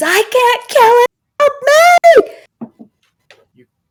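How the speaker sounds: very loud, very high, slow, drawn-out scream. Narrating a game scene, the storyteller voices the man with the knife, screaming. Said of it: "and he screams".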